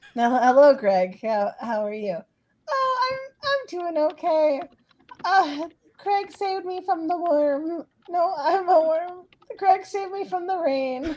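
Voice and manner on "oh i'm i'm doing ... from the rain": very high-pitched character voice. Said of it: "I don't know if this is the right voice".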